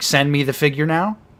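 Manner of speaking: ordinary talk, nothing marked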